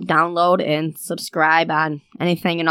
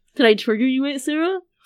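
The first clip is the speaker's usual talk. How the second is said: high, teasing, needling, mocking taunt; 7 semitones higher than usual. Imitating a nephew teasing his aunt: imitating nephew Hayden taunting. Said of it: "what the hell, Hayden?".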